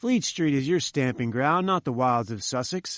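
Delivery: ordinary delivery, nothing marked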